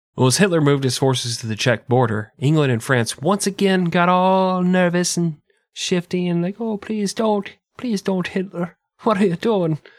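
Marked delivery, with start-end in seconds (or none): 6.6-9.8 fake Irish accent, higher. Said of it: "They all turned Irish".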